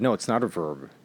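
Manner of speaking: defiant, stubborn, adamant, flat delivery. Retelling an argument over a word, imitating a defiant retort. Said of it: "And she said it so defiantly".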